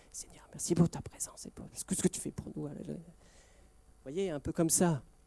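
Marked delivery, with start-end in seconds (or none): 0.1-2.6 breathy half whisper, between whisper and speech. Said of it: "entre le chuchotement et le".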